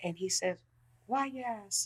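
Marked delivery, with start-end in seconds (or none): 1.1-1.9 very quiet, high, soft great-grandfather voice. Retelling asking his great-grandfather a question in the car, Norman's soft voice. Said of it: "As he had a soft voice".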